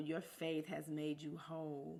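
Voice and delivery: ordinary talk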